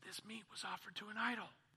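secretive, hushed, leaning-in half-whisper. Acting out a brother in Christ leaning over at dinner: half-whispering. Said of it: "he leans over to you and he whispers".

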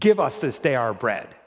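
insistent, demanding, commanding tone. Showing how intonation changes a prayer line: demanding tone.

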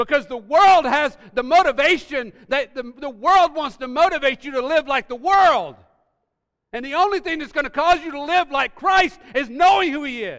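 impassioned preaching yell, very loud and high-pitched. Urging listeners, then apologizing for the volume, yelling. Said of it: "Sorry if I'm yelling".

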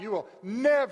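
forceful, adamant shout. Retelling a Bible passage, acting out one disciple's reply; retelling a shout. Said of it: "Peter shouting".

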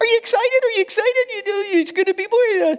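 squeaky, high-pitched little voice. Retelling how the church ladies kept asking about the coming baby: squeaky voice. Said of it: "in a squeaky voice".

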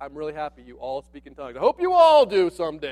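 mock-glad, a little sarcastic, overjoyed tone. Voicing the apostle's words to an excited church: imitating a sarcastic tone. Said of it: "being a little sarcastic".

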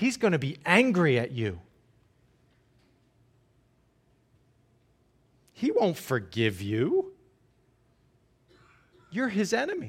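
hushed, swooping, accusing stage whisper. Speaker voicing the little voice that half-whispers after falling short, accusing half-whisper. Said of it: "sometimes a little voice whispers".

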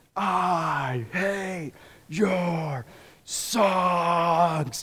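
guttural demonic snarl, "I" stretched out. Retelling what a person's demon screamed through the man's hands: retelling a loud guttural demon scream. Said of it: "in a crazy loud guttural voice".

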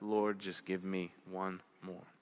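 mumbled under the breath. Retelling a rescuer's prayer on a cliff: imitating someone mumbling under his breath. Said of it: "he was mumbling under his breath".

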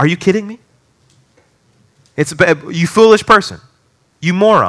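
put-on strong, stern scolding tone. Voicing Paul answering a doubter's question: imitating a strong rebuke. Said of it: "Paul says in verse thirty-six very strongly".

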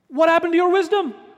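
mock sarcastic tone, very high-pitched throughout. Retelling how Paul questions the Corinthians: acting out a sarcastic question. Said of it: "he says very sarcastically".

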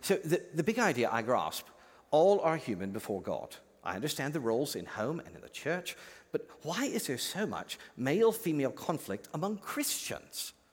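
put-on British accent. Voicing the listeners' imagined question to the preacher, in a Rebecca McLaughlin accent. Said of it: "in your Rebecca McLaughlin accent".

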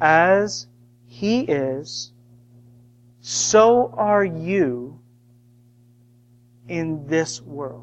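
very slow, deliberate, preaching cadence, each word weighted. Speaker repeating a key line for listeners, said slowly. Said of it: "I'll say it slow".

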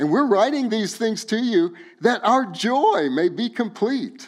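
cracking, breaking voice. Reading a scripture passage aloud to listeners, voice cracking. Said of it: "my voice cracked".

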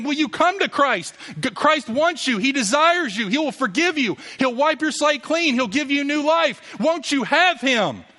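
very high, earnest, imploring pleading. Showing how god calls through people pleading: acted pleading. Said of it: "God calls through people pleading".

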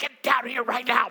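mock-angry whispered dad voice. Retelling scolding someone in a room requiring decorum, using the dad voice. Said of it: "I used the dad voice of".

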